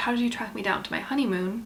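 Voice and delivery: plain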